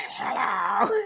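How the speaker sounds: groggy, just-woke-up morning voice. Showing how he sounds when called early in the morning, sounding like Wheezy. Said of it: "Y'all think I sound like Wheezy now?".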